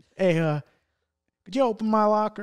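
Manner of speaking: put-on heavy, laid-on country accent. Retelling what his next-door neighbor asked at the lockers, in a thick country accent. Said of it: "with a thick country accent".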